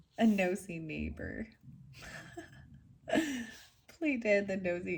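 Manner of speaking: giggling and laughing through the words. Giving an opossum reading to listeners, amused by it, giggling. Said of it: "I'm just I'm giggling about it".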